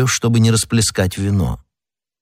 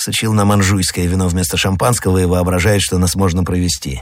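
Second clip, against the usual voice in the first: ordinary delivery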